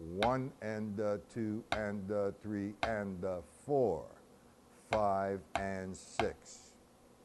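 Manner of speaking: slow, deliberate, counted-out measure. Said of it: "Okay, so here we go".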